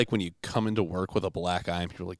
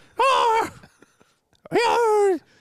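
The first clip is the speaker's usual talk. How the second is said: fake Irish accent, higher and louder; 5 dB louder than usual. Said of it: "This is Irish, right?".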